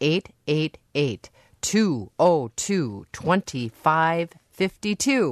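slow, careful, unhurried delivery. Radio host giving the pledge phone number to listeners, said slowly. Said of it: "or I'll say this slowly".

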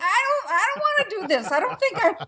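unwilling, reluctant delivery. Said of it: "who kick and scream saying".

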